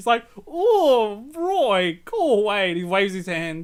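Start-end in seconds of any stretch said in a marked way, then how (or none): 0.5-2.7 loud, posh, pitched up, dismissive, with stretched "oh". Retelling a comic where a character waves Roy away: posh Muff voice. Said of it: "Muff's like a posh shithead".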